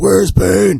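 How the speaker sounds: loud, high, demanding vigilante hero voice.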